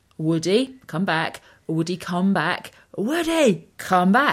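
insistent repeated shouting, climbing in pitch. Retelling a dog running off on the beach: imitating partner shouting. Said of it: "my other half's shouting".

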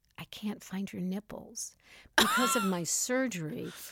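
put-on whispering voice. Retelling a drunk date's words in her ear: imitating someone whispering. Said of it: "That's what he whispers in your ear?".

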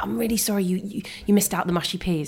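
usual speaking voice

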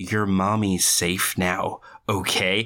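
very slow, super condescending, talking-down tone. Recapping a scene and acting out Plague's line, mock-condescending as Plague. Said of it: "goes super condescending".

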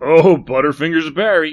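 derisive. Rodney speaks to Barry after something shatters, mocking. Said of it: "said Rodney in a tone that was more mocking than sympathetic".

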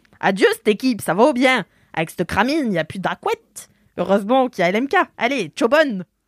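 put-on, attempted Swiss accent. Reading sample phrases from an Instagram account on regional dialect, attempted Swiss accent. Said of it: "J'espère que je fais bien l'accent".

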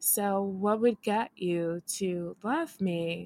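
put-on flat monotone. Recapping two people on a show for listeners not watching, imitating a monotone voice. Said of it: "they're both monotone".

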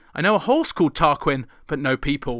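normal talking voice

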